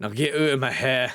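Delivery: put-on Scottish accent from Glasgow. Character's dialogue, in a glasgow scottish accent. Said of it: "This is a specific Scottish accent from the s- city of Glasgow".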